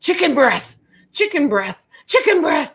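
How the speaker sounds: very high, loud shouting, repeated over and over. Retelling how a man came flying into the ER, imitating a man yelling. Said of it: "and he's yelling".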